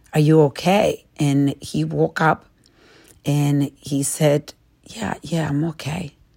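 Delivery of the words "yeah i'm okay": faint, very soft, quiet voice. Retelling how a man lying on the floor answered the speaker, very soft reply. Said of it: "with a very soft voice".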